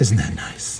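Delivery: hushed, breathy, deliberately bad put-on voice. While gluing a tail together, a terrible Bob Ross impression. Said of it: "that's enough of my terrible Bob Ross impression".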